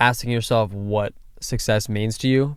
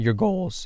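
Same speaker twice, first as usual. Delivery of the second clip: cracked, breaking voice, going high on "goals"; 7 semitones higher, 3 dB quieter than usual. Asking the other speaker how they set their goals, voice cracking. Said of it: "Wow, voice crack".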